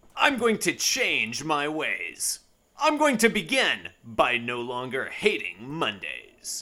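resolute, slow, drawn-out voice with a swooping pitch. Reading a Garfield comic strip aloud, in a determined Garfield voice. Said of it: "he looks kind of determined, which is why I'm using that voice".

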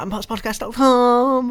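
very high and loud, bursting with energy. Plugging a podcast website address, saying it really energetic. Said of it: "You've got to say it like really energetically".

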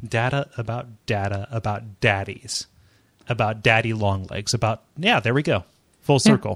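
ordinary delivery

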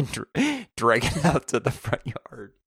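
words broken up by laughing. Explaining a chore to another speaker, laughing while talking. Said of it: "I'm laughing just".

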